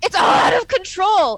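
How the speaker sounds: very high, loud, full-throated shriek. Game master voices a character behind the players, screaming. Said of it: "And then she screams".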